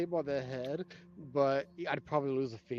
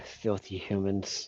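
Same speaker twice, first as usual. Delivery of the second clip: whispered mutter under the breath, meant to carry; 5 semitones lower, 4 dB quieter than usual. Muttering an in-character remark about humans: stage whisper. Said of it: "stage whispers".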